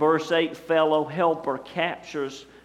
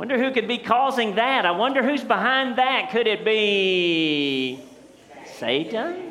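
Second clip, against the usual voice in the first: pious tone, pitched up, be drawn out; 6 semitones higher than usual. Imitating a sketch character for a congregation: imitating the Church Lady. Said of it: "That's what she would say".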